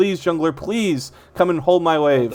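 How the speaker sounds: put-on screaming. Voicing the mid laner begging the jungler for help: imitating a screaming plea. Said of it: "I'm screaming".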